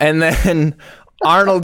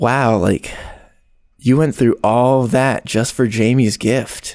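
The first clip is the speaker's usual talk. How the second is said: put-on, half-flirty, suggestive, semi-seductive delivery; 5 semitones lower than usual. Retelling a movie scene, imitating a semi-seductive tone.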